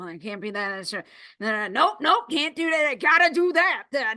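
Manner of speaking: quiet, annoyed, angry grumbling under the breath. Recalling sitting there muttering to oneself, acting out an angry mutter. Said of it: "that angry mutter that we do".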